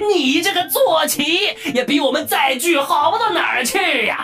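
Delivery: roaring with laughter. Seeing someone bounce off the treasury entrance, a character speaks laughing wildly. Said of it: "西曼顿时狂笑道".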